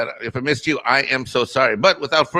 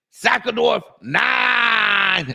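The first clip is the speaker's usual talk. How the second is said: practiced, pitched-up calling voice, "nine" drawn out; 7 semitones higher than usual. Practicing reading a chat name the way Loki does it: imitating Loki saying a name. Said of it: "I love when Loki does it".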